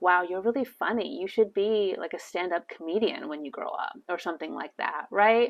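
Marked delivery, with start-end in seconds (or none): 0.0-3.9 genuine, earnest, sincere tone with no irony. Complimenting someone on being really funny, sincere, with no irony. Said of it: "you have to say it with like no trace of irony or meanness".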